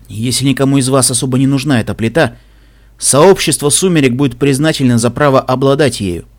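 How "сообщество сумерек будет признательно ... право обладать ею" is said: ordinary delivery, nothing marked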